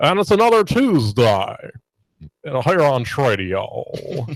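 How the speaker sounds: put-on old-school vintage radio announcer voice. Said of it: "the most old school radio guy".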